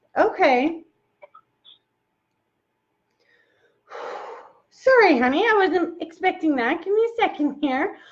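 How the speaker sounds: emotional voice, almost crying. On a phone call, just made emotional by the person on the line; almost crying. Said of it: "I'm like almost crying".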